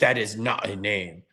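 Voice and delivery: put-on French accent with a little attitude. Retelling an airport argument over your name, quote the man in a French accent. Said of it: "the guy had a French accent and he goes".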